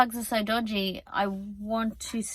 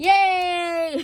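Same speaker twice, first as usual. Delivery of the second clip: laughing, very high, drawn-out joyful squeal; 9 semitones higher, 6 dB louder than usual. When the plugged-in fridge finally beeps, the speaker gives a joyful laughing cheer. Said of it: "[laughs joyfully]".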